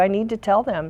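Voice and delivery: ordinary talk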